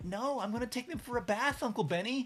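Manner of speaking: high-pitched child voice with put-on American accent. Retelling what a niece says while copying videos: imitating a child's put-on American accent. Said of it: "you wanna talk like an American".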